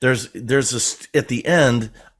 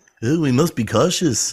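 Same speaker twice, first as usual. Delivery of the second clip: put-on stuffed-nose voice, much higher; 3 semitones higher than usual. Showing off their Obi-Wan impression, Obi-Wan impression with a stuffed nose. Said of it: "You have to talk like your nose is stuffed".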